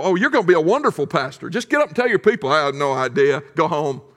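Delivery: sarcastic, backhanded, put-down tone. Retelling what Doctor Freeman said to an unprepared student: imitating Doctor Freeman's sarcasm. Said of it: "he would sarcastically go".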